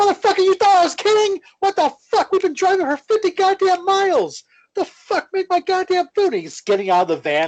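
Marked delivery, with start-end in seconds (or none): 0.0-6.3 shrill, very high screaming, yelling rant. Retelling a drive-thru rant where he yells at the worker: imitating Jim Cornette yelling. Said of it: "yelling at the woman".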